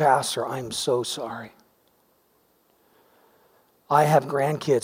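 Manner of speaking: acted tearful speech, slow, words pushed out. Retelling how the head senior citizen at the meeting answered the pastor: imitating tearful speech. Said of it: "he said it through his tears".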